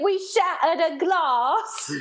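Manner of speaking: terrible fake British accent, high and very slow. Not wanting to seem like Americans in a bar: really bad British accent. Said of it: "I did that in a really bad British accent".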